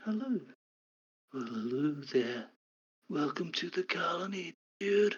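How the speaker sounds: slow, soft, half-whispered voice. Voicing a voice that half-whispers in a player's head: quiet half-whisper. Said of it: "you hear a whisper in your head".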